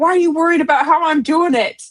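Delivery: mock shouting, yelled straight back. Telling a work story, the speaker repeats what they yelled at a coworker: retelling a scream back. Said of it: "And I screamed back".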